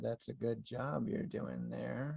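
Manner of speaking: hushed, low, slow, creaky, creepy narrator drawl. Suggesting someone imitate his voice for a cardboard cutout in a script writer's office, creepy Keith Morrison tone. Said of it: "in his creepy tone".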